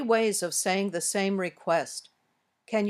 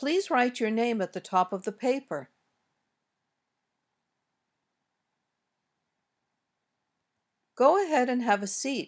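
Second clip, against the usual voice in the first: pitch falling on paper and settling down on seat; 3 semitones higher than usual. Demonstrating example requests and commands, with falling intonation at the end. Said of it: "Intonation also usually goes down at the end".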